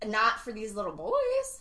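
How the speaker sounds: cracked voice breaking mid-line. Speaker jumps into the conversation, voice cracking. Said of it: "did you hear how her voice is cracked?".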